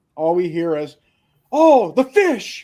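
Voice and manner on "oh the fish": sudden, shrill, very high, loud scream. Retelling how someone broke a silence in the car, imitating someone screaming. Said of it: "Just screams it".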